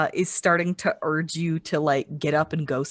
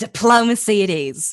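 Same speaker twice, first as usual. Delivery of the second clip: sinister, wicked tone with raised voice; 4 semitones higher, 5 dB louder than usual. Voicing a character whose excited smile turns wicked: turning wicked. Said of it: "turns kind of wicked, and she says".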